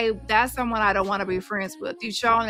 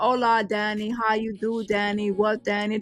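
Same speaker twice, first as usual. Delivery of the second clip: timid, muted, meek, soft little voice. Mocking people who holler online but go quiet on the phone: mock soft, meek voice. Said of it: "talking all soft and mute and meek".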